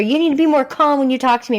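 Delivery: high-pitched insistent yelling.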